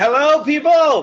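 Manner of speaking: very high-pitched, shrill, loud yelling. Greeting viewers as the broadcast starts: yelling. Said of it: "Why are we yelling?".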